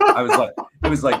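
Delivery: high, loud, rushed speech while laughing.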